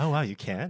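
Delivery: very judgmental, disapproving tone. Repeating own earlier reaction on purpose: mock judgmental tone. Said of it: "very judgmental way".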